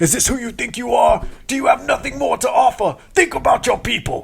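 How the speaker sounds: high, shrill, forceful yelling. Describing wanting to give up mid-set, the speaker hears Vegeta: Vegeta yelling impression. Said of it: "just yelling at me like".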